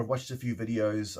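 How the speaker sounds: usual speaking voice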